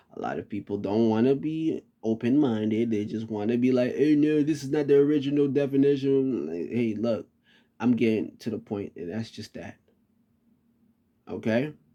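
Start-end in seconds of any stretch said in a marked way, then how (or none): 4.0-6.5 play-acted sarcastic, dismissive voice. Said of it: "I'm saying it like this sarcastically".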